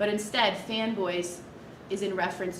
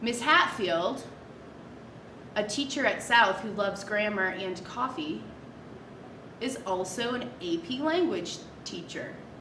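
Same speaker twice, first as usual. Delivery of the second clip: deliberate read set off by long, exaggerated pauses. Lesson on commas and natural pauses, example sentence: long pauses around the middle phrase. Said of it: "I exaggerated the pause and it made sense to pause there".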